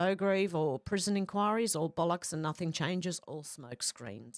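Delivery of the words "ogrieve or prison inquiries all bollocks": plain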